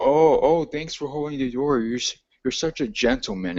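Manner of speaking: put-on sarcastic tone. Retelling a remark one of the women made about the speaker, imitating a sarcastic remark. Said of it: "in a sarcastic in a sarcastic voice".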